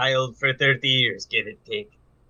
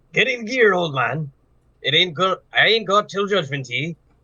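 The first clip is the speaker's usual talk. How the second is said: put-on mixed accent, Irish and Southern together; 5 semitones higher than usual. Voicing a truck driver offering a ride: Irish-Southern mixed accent. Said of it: "Irish mixed with Southern almost".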